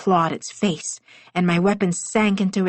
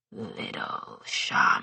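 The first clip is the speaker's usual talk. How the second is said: whispered, low, breathy monster growl; 9 dB quieter than usual. Narrator reading a wounded creature addressing the narrator, in a low growl. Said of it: "it growled in a low voice".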